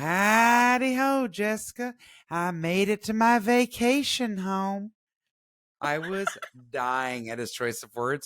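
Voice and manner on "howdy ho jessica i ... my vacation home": high, loud, slow jester doll voice, howdy stretched long. Retelling a video he sent her back: Harlequin doll voice. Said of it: "using the Harlequin voice".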